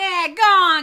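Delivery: shouting. Retelling a scene where Joxer chases wolves off: imitating Joxer yelling. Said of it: "he starts yelling".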